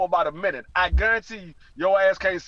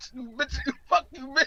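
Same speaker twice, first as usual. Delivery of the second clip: put-on high kid voice outburst; 6 semitones higher than usual. Retelling a comedy bit, the kid sent to timeout: imitating a kid cursing at mom. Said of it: "Johnny like".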